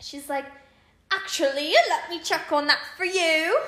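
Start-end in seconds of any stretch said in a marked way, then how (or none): 1.1-3.6 very loud fake British accent. Retelling an order where the worker suddenly changed accents: imitating a fake British accent. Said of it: "She changed to a British accent".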